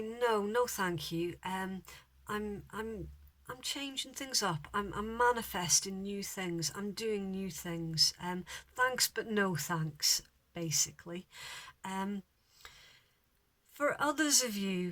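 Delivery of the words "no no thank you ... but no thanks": usual speaking voice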